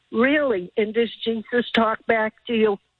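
plain

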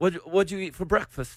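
deliberately bad, fake British accent. Carrying on a staged back-and-forth conversation, speaking in a bad British accent. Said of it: "Our accents suck".

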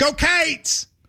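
Kentucky way of speaking. Correcting how others say a cheer, the speaker shows it in a Kentucky accent. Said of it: "but we in Kentucky would go".

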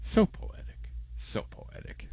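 soft, breathy, mock-reverent whisper.

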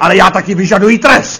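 grand dramatic voice, rising and slowing.

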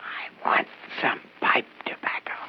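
breathy, hushed whisper under the breath. A customer asks a shopkeeper for pipe tobacco, whispering. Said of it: "what are you whispering about?".

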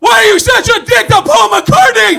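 angry, high, loud heckling shout.

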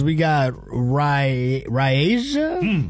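name said slowly and drawn out.

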